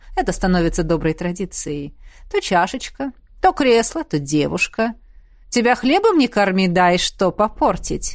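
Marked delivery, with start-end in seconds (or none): none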